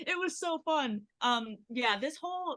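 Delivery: high, way too excited, bubbling-over gush. Answering a question about acting in a music video: very excited. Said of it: "I got way too excited".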